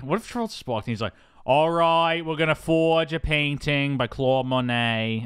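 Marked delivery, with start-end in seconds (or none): 1.5-5.2 modest attempted Boston accent. Imagining what Charles would say on walking in, Charles doing a Boston accent. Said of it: "He's trying to do a Boston accent".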